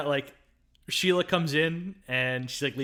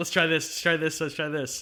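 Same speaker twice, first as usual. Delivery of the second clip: ordinary talk, nothing marked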